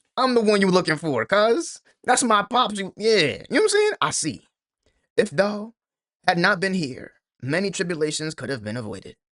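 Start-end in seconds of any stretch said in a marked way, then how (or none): 0.2-2.8 play-acted voice swollen with pride, pitched up. Reacting to a scene, repeating Loki's line: proud Loki voice. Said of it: "Loki is talking with just straight pride".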